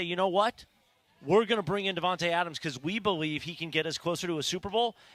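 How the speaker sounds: ordinary talk, nothing marked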